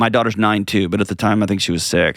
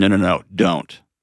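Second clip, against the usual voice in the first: acted choked-up voice catching, with slow words. Retelling own past words after laughing: retelling choked-up words. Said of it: "and then I got choked up".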